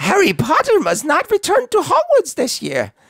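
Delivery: very high, squeaky voice with swooping, swinging pitch. Trying out a quote in different character voices, in a Dobby voice.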